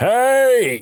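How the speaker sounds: scream as if asleep. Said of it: "My dad just screams".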